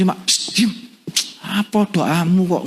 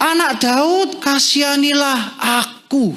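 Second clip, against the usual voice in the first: very high-pitched, loud, pleading, begging cry; 9 semitones higher than usual. Retelling a man calling out to Jesus after being told to hush, retelling a loud cry. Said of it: "semakin keras ia berseru".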